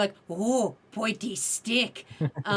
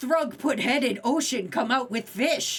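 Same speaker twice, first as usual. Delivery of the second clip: blunt, broken caveman speech; 2 semitones higher than usual. Retelling answering a girl at a Renaissance fair while dressed as a caveman: retelling own caveman talk. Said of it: "I was Thrug".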